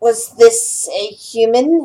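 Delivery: very slow, drawn-out goblin chief voice. Voicing the leader of a group of goblins in a story, goblin leader voice. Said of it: "the leader goblin says".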